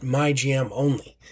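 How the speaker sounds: ordinary delivery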